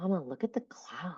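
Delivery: put-on awe-filled, wondering voice of a small child. Retelling a child's remark about a cloud: imitating a daughter's awe-filled voice. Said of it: "the way she said it in her voice was just, like, so awe-filled".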